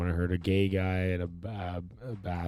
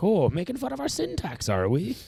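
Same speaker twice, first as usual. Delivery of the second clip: put-on Irish accent; 13 semitones higher, 5 dB louder than usual. Retelling a Simpsons joke about the Irish: put-on Irish accent. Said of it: "the Irish".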